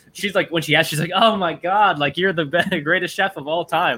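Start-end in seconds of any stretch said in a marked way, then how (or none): 1.2-4.0 play-acted, effusive, thrilled, excited gushing tone. Retelling how a neighbor reacted when asking for the pasta: imitating excited gushing praise. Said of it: "she was really nice about it".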